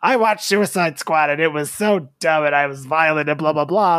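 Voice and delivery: motherly voice. Retelling a complaint about Suicide Squad: imitating his mom. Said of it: "I like your impression of your mom".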